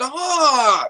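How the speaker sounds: put-on very high, childish, whiny, with the word stop drawn out. Imitating young kids who turned around to stop his cheering: mock-whiny childish voice. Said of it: "like in a whiny voice".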